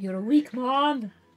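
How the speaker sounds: put-on loud voice with Irish accent. Repeating a line from a TV show: Irish accent. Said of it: "is that Irish?".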